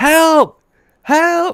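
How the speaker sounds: shrill, very high, loud screaming. Retelling a trip, the speaker reenacts screaming for help at people on a cliff. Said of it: "I start screaming".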